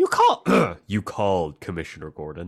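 animated hero voice, pitch swinging all over. Recapping Dick greeting the Commissioner while trying his best Bruce impression. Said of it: "trying to do his best Bruce impression".

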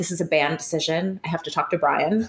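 very serious. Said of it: "she was very serious".

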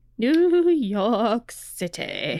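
swooping sing-song TV-style voice, pitch swinging up and down. Naming a story's setting, the speaker says it like Laszlo. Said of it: "say it like Laszlo from What We Do in the Shadows".

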